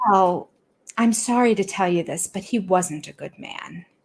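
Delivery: put-on sugary, sweet, patronizing talking-down tone. Retelling how Christine answered the aunt, in a mock-patronizing Christine impression. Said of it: "Christine patronized her by".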